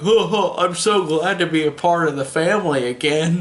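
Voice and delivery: silly, dopey cartoon voice. Describing how a character's story ends: silly, dopey Goofy-like voice. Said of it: "this silly, dopey voice like Goofy".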